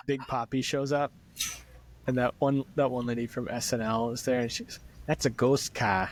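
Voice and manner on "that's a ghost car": thick, heavy put-on Boston accent. Retelling a scene, quoting a woman from SNL in a thick Boston accent. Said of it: "doing like the thickest Boston accents".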